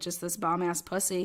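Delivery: normal talking voice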